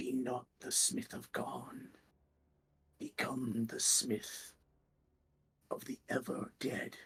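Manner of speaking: hushed whispering voice. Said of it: "the rattling of bones and a whispering".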